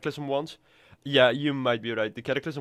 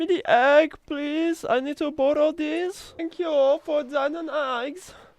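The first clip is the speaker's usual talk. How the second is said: fake German accent, higher and louder; 4 dB louder than usual. Asking a game character for eggs: put-on German accent. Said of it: "I'm suddenly a German guy".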